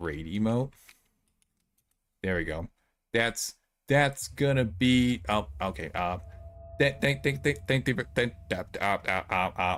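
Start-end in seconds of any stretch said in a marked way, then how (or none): 6.8-9.8 stammering, much faster. Putting together a raid message and losing the words: stammering. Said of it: "I'm stammering".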